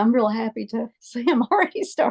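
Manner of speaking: emotional, voice catching on words. Introducing yourself as a state ambassador in a video interview, choked up. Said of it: "forgive me for getting choked up".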